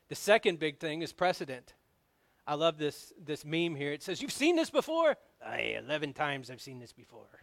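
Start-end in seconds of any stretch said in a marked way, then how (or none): 4.2-7.2 really bad, swooping put-on cartoon voice. Quoting a meme in a really bad Mister Krabs impression. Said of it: "my really bad Mister Crab impersonation".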